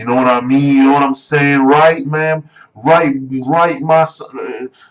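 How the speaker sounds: simple-minded dumb-guy voice. Mocking the way people expect him to talk: imitating stereotyped simple-minded talk. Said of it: "that kind of talk".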